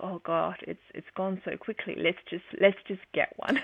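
ordinary talk

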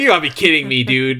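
put-on screaming, yelling voice. Retelling watching a show and screaming at the TV: retelling own screaming at TV. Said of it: "I was screaming at the T V".

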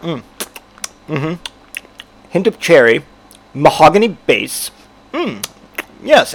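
very slow, savoring connoisseur voice. Retelling how people sip and slosh wine: imitating a wine taster. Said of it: "They're like".

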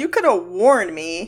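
ordinary talk, nothing marked

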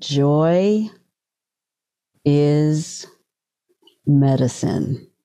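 each word laid down very slowly, "is" stretched out. Quoting something Oak said, the speaker says it very slowly. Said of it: "I'm going to say it slowly".

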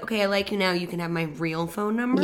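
ordinary talk

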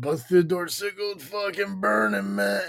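mock worked-up, excited, high-pitched blurting. Retelling a coworker bursting in with news of a fire: imitating a coworker's excitement. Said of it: "that was his excitement".

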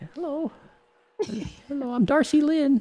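odd, very high-pitched puppet voice. Discussing a show, the speaker mimics the puppet they found weird: imitating a weird puppet. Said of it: "the puppet was weird".

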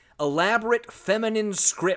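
plain

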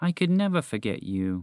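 soft, slow, unhurried, gentle, comforting tone. Narrator reading a moose's reply to his mouse friend, slow and gentle. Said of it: "he said slowly and gently".

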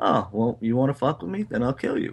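ordinary talk, nothing marked

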